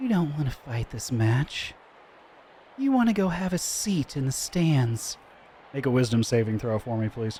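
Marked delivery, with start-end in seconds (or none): 0.0-5.2 soft, gentle, faintly alluring, slightly seductive voice. Game master voicing a veiled woman calling out to a player's character, gentle, slightly seductive voice. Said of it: "with a gentle yet slightly seductive voice".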